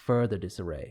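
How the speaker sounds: usual speaking voice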